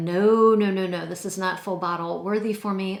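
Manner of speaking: normal talking voice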